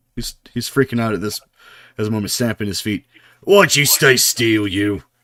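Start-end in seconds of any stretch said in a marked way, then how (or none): 3.4-4.9 contemptuous, loud, drawn-out sneer. Voicing a fighter who is freaking out and stamping his feet: sneering. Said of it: "He sneers at you".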